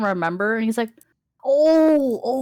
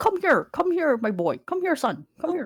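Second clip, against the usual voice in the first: high, eager, coaxing beckoning call; 5 semitones higher than usual. Voicing Uncle Henry calling the player character over: voicing Uncle Henry. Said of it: "he's like".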